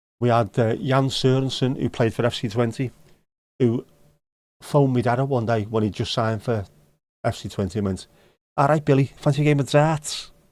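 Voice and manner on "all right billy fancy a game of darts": put-on strong Scouse accent. Retelling a player's phone call to his dad, in Jan Sørensen's Scouse accent. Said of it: "they all talk English with a Scouse accent".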